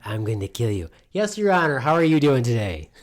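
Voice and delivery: put-on creepy murderer voice. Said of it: "creepy murderer style?".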